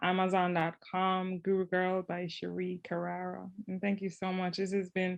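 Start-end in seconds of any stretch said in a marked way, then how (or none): 3.7-5.2 choked-up voice, holding back tears. Thanking the podcast host at the end, holding back tears. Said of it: "I'm trying not to cry".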